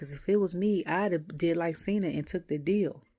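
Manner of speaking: usual speaking voice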